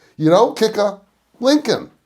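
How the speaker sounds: mock upset little man. Retelling a fight after kicking a car, quoting its short driver; imitating a really upset man. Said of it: "Really upset".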